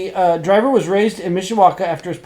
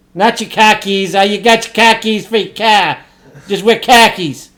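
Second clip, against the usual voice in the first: loud put-on Boston accent on every word; 2 semitones higher, 6 dB louder than usual. Asked to do their Boston accent for the bit, the speaker answers in a Boston accent. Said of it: "can you do your Boston accent for this?".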